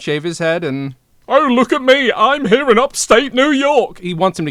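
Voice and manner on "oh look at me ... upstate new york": put-on high-pitched, loud British accent. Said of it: "keep the accent".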